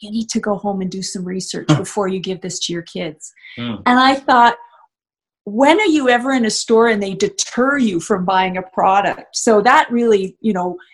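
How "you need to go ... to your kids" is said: soft, hushed, confidential stage whisper. Retelling a sales clerk leaning in to speak to them, imitating a clerk's soft half-whisper. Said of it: "leans in and whispers to me in a really soft voice".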